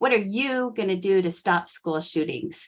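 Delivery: plain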